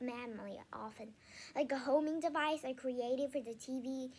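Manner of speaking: ordinary delivery, nothing marked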